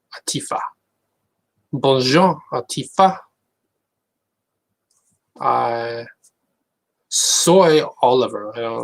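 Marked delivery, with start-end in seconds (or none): 1.7-3.2 put-on French accent. Speaker shows off languages they don't actually know, French accent. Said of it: "I can speak with a French accent".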